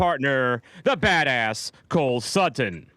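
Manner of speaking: hyped announcer style. Introducing the show's hosts to the audience, in announcer voice. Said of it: "you've got the announcer voice".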